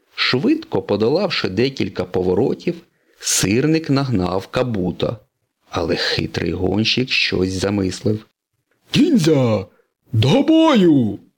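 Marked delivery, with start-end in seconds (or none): 8.9-11.2 loud, high battle-cry shout, бою stretched long. In a story, the cunning racer calls his ninjas into battle, shouted. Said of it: "крикнув Кабуто".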